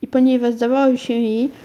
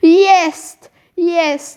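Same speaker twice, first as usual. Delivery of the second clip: glad, delighted outburst, high and loud; 6 semitones higher, 5 dB louder than usual. Searching the floor, she finally spots what she was looking for, cried out joyfully. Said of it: "Naraz krzyknęła radośnie".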